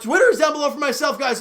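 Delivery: breaking voice, cracking mid-line. Video host pointing viewers to his Twitter, voice cracking. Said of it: "Voice crack".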